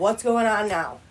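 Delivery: soft, fed-up, irritated police officer voice. Retelling the police arriving after a frantic call, imitating an irritated cop. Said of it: "you can hear the irritation in this cop's voice".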